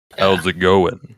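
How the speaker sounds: forced, put-on, deep, low sultry voice. Greeting everybody again after being asked for a deep voice: put-on deep sultry voice. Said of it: "You need to have a deep, sultry voice".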